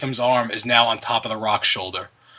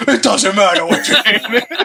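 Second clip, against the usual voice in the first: loud, high-pitched crowd-like yelling; 9 semitones higher, 5 dB louder than usual. Retelling what the theater audience yelled during a scene: imitating a crowd yelling. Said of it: "half the theater yells out".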